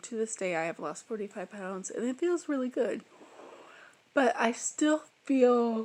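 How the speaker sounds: speaking through yawns. Speaker, tired from the cold, talks about their year; yawning while talking. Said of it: "I'm yawning so much".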